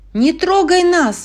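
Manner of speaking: very high, terrified, frightened shout. Narrating a story, a character sees a sea monster come out of the water: frightened shout. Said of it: "закричала она".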